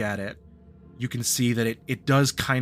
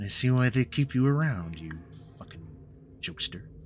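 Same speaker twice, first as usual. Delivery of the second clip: chuckling through gritted teeth, lower, quieter; 3 semitones lower, 3 dB quieter than usual. The narrator voices Evelyn answering the player, chuckling through gritted teeth. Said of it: "chuckles through gritted teeth".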